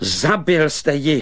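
sudden, high exclaimed cry. Narrator reading the shepherd boy confronting the prince over the motionless doll, crying out. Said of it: "vykřikl pasáček".

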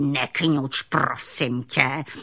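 put-on surly, grumpy, old-sounding growling snarl. Narrator voicing the alligator answering the little raccoon, growling. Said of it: "zavrčel na něho aligátor".

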